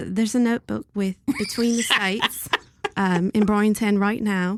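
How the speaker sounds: fake, put-on British accent attempt. Describing a notebook after being asked to do the UK accent: put-on British accent. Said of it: "Describe, describe this notebook".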